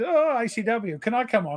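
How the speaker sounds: meek, high-pitched, slow, simpering, begging voice. Retelling another speaker's message asking to come on: imitating a simpering plea. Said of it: "He just said".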